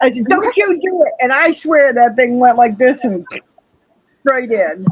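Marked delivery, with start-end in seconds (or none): 0.2-1.1 very high, stern, yelling cry. Retelling yelling at a bug perched on a tank's edge: imitating own past yelling. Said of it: "What are you yelling at?".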